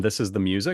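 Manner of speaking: ordinary talk, nothing marked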